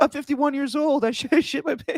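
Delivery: very high, tearful, sobbing wail. Retelling a stunt scene where Preston Lacy cries: imitating Preston Lacy crying. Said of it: "He starts to cry".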